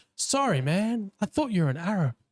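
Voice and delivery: put-on American accent laid on thick. Retelling a trip, the speaker quotes a man's reply in a broad american accent. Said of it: "in this broad American accent".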